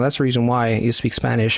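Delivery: ordinary talk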